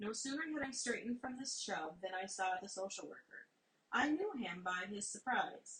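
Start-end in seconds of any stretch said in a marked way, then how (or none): none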